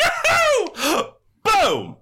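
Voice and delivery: very high, swooping, full-throttle yell. Telling a story about Matthew Lillard, imitating Matthew Lillard's yell. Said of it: "does not know how to do things quietly".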